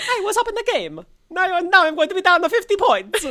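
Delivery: very high, loud, belted cartoon voice. Imitating an Italian fisherman complaining about losing: Mario voice. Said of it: "I'll just do Mario".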